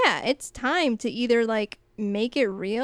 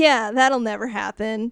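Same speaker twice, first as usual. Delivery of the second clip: put-on joking, jokey delivery; 4 dB louder than usual. Retelling one character's reply to another, imitating a joking tone. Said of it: "she does it all, like, jokingly".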